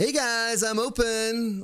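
high-pitched, very slow delivery with open drawn out. Wishing the game shop announced its opening in Trader Jen's voice. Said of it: "have Trader Jen's voice on her little thing".

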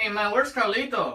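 put-on Mexican accent. Asking where carlito is, in a mexican accent. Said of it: "Our Mexican accents are on point".

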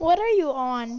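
teasing, laughing voice.

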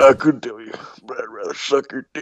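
low, deep voice. Sylvia answers the other characters' question about someone, in a deep voice. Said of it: "[name] came down to my bar one time. ... get the hell out of my bar. ... It's like she has a deep voice".

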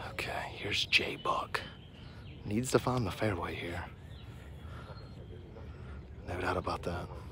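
soft, hushed golf commentator whisper.

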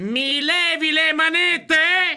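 high, very slow, deliberately drawn-out speech.

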